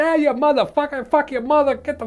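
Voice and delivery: mock, very high-pitched, yelling Boston accent tirade. Speaker compares how people from different places curse at you, imitating a yelling boston guy. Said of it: "a Boston guy can yell at you".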